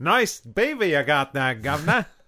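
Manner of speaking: put-on Australian accent. Joking about gentlemen's beaver hats, put-on accent that sounds Aussie. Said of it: "That sounded a little bit too Aussie there".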